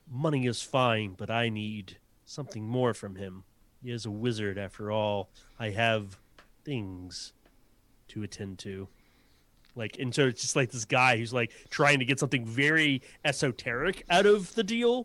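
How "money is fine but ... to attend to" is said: low, extremely deadpan, mock dead flat, unmoved. Retelling how a refined man stonewalls a negotiator: mock deadpan. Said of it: "being like extremely deadpan".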